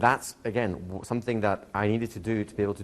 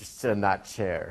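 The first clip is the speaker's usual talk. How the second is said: put-on spaced-out, zoned-out tone with slight American accent. Imitating Erickson to a man back from smoking, spaced-out Erickson impression. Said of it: "doing my best impression of Erickson".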